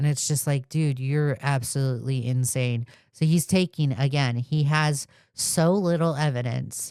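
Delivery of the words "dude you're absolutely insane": ordinary delivery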